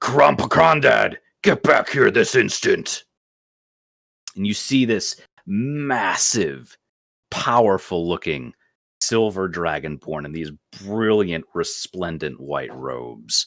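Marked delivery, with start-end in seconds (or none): 0.0-3.0 loud, cracking commanding shout, higher and louder. Voicing a dragonborn father calling a child back: loud voice cracking through the air. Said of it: "this loud voice kinda crack through the air".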